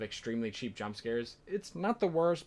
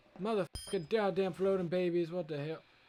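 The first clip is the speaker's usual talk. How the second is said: put-on grandpa voice, much higher pitch; 6 semitones higher than usual. Playing through a game map, reacting to floating babies, in an old grandpa voice. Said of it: "for this entire map I just did a grandpa impression".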